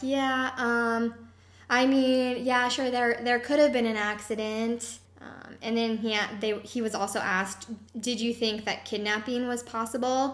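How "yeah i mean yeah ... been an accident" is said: imitated stumbling, hesitant speech, higher and slower. Retelling how a man answered a question about an accident, imitating stumbling answers. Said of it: "He started stumbling in his answers".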